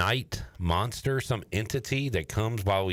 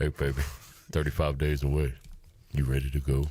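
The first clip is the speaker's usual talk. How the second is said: exaggerated put-on deep voice, much lower; 8 semitones lower than usual. Counting down thirty-five days with a co-host: exaggerated deep voice. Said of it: "Are you the deep voice guy from Boys to Men?".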